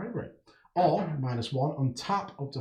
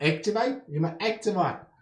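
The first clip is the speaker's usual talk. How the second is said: slipping into a pitched-up South African twang; 5 semitones higher than usual. Reading out rules text aloud, slipping into a South African twang. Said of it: "I fell into sort of a South African twang there".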